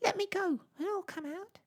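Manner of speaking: tiny, very high, squeaky little voice. A narrator reads a little rat's plea after its tail is caught, squeaking. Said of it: "squeaked a little voice".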